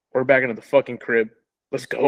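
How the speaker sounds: ordinary delivery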